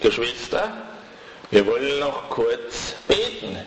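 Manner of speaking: heavy stress leaning hard on the word kurz.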